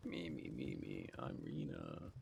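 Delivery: very deep, very slow, rough raspy drawl. After hearing someone else's impression, speaker tries a Rena impression, raspy. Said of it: "You got the raspiness of her voice down".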